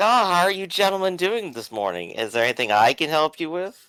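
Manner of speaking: breezy, casual and cheerful. Playing a character greeting threatening visitors: nonchalant, happy attitude. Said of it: "a nonchalant, happy attitude".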